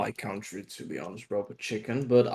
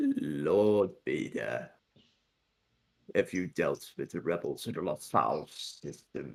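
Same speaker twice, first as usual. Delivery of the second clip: very low, hushed evil emperor voice, "Lord" stretched; 7 semitones lower, 6 dB quieter than usual. Speakers act out a favorite scene from Rebels: Palpatine impression. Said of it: "impersonate with the Palpatine voice".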